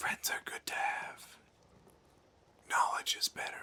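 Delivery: faint, breathy, creepy whisper. Voicing a mysterious whisper on the wind to a player: whispering voice. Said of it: "there's just a whisper on the wind".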